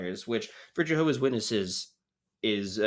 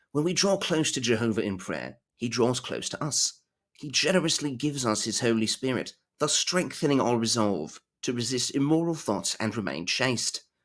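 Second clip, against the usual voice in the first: unconvincing, bad, put-on British accent. Reading a passage aloud, in a bad British accent. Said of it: "That's not a good British accent".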